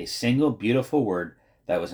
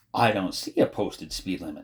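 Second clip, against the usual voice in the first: usual speaking voice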